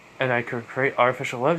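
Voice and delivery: ordinary talk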